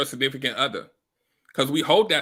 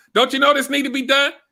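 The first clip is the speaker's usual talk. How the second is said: mock elevated voice, very high-pitched and loud; 11 semitones higher, 6 dB louder than usual. Retelling a partner's complaint about sitting down: imitating partner's raised voice. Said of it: "listen to my tone".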